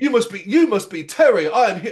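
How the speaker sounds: wooden, stiff, loud, stilted, badly acted delivery. Recapping a scene where a fighter confronts Terry; Kim Cap One's bad voice acting. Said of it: "this is where the bad voice acting comes in".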